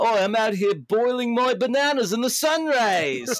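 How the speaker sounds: put-on comic English accent. Quoting a funny line from a monkey in a video game: English accent. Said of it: "they say something really funny in an English accent".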